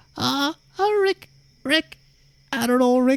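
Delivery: very high, squeaky cartoon voice. Showing the only Morty impression they can do: Morty voice. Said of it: "I can only do".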